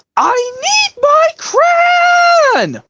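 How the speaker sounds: very high, very slow, drawn-out yell. Acting out a scene from the show: Cassie yelling. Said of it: "when Cassie yells out".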